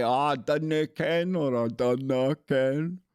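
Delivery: very slow, put-on Scottish accent. Retelling how others say it when putting on an accent: imitating a put-on Scottish accent. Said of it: "when they go to put on a Scottish accent".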